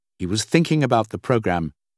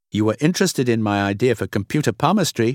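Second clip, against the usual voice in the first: ordinary delivery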